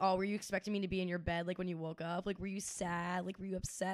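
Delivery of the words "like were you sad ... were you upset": ordinary talk, nothing marked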